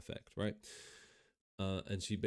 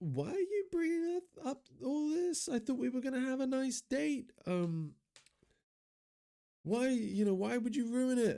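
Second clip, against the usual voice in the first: play-acted very high, shrill, unhinged hysterics at full voice; 6 dB louder than usual. Describing an actress's unhinged scene, imitating Indy's hysterical outburst. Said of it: "at the top of her voice in this hysterics".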